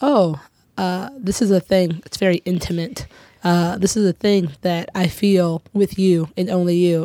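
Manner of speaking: ordinary delivery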